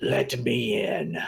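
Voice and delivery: shrieking, rough, rasping ghostly scream. Voicing a smoky monkey spirit leaping at a player: screaming.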